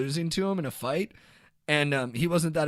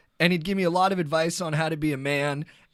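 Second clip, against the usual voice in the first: ordinary talk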